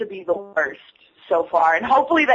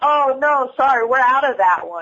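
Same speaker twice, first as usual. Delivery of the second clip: playful, teasing, joking tone; 4 semitones higher than usual. Retelling what he said to someone picking wall art, retelling a joking line. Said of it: "And he jokingly goes".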